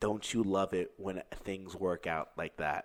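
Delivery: very low, hushed, breathy half-whisper close to the ear. Retelling the story, the speaker repeats what a woman half-whispered in their ear, imitating a breathy half-whisper. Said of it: "she whispers in my ear".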